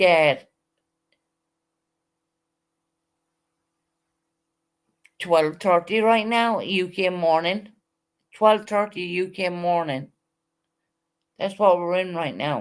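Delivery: drowsy, tired-sounding medicated speech. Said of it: "I meant to sound tired".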